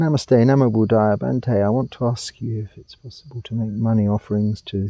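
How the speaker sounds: indistinct, mumbled, run-together words. Reading out the first submitted question to the audience, mumbling. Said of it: "Sorry, I'm mumbling".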